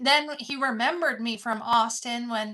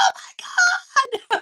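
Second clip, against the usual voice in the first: very high, delighted, excited scream; 7 dB louder than usual. Retelling screaming alone in the car after a reply, imitating excited screaming. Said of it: "I'm all screaming in the car like".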